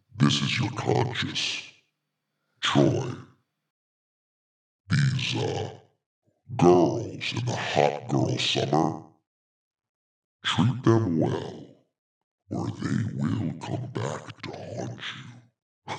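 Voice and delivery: terrifying, nightmarish put-on voice. Asking Troy how the voice sounds, warning him as his conscience: scary voice. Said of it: "It's terrifying".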